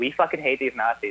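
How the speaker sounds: ordinary talk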